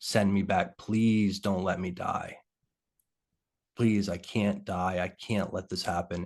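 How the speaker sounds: put-on scared, desperate pleading. Retelling a near-death moment, begging to be sent back: imitating a scared plea. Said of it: "scared and continued to plead".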